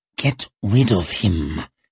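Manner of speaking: hissed, spoken as a hiss. Reading a novel scene, a character orders a prisoner removed, hissing. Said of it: "hissed Glokta".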